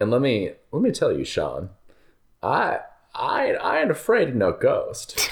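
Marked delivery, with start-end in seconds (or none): 3.5-5.3 put-on swooping Southern gentleman drawl. Quoting the movie line in a put-on southern gentleman voice. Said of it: "I'm not sure what this voice came from".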